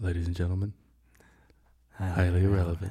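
soft, airy, breath-filled voice. Speaker takes a turn saying the shared intro line to listeners, breathy. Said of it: "Yours is very breathy".

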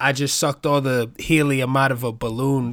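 normal talking voice

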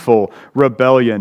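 plain

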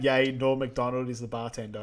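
plain

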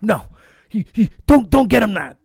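acted-out yell. Retelling a man yelling at the person taking their order: retelling a yell. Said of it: "he's yelling at the person".

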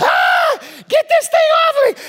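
very high, shrill, swooping, screaming monkey screech. Telling about trapped monkeys in a YouTube video, in mock monkey screaming. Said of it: "They start screaming".

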